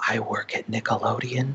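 slow, hushed, confiding half-whisper. Retelling a stranger at a convention sharing a secret: imitating someone half-whispering. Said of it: "Like they're whispering to me".

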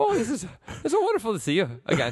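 attempted Scottish accent. Acting out a Trudeau bit, greeting someone: put-on Scottish accent. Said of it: "are you doing Scottish?".

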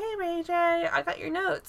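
sweet, soft, high, darling little voice. Retelling a girl approaching [name] while he's on the phone, darling little voice. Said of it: "this real, like, darling little voice".

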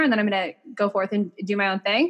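ordinary talk

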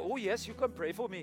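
put-on low, soft, clumsy Indian accent, poorly done. Retelling a man's answer when offered prayer, in a bad accent. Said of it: "And bad accent".

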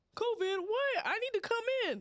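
incredulous, disbelieving tone.

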